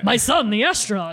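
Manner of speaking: grand, room-filling announcing delivery. Quoting an actor's famous film line: J.K. Simmons impression. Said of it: "It's like how he announces".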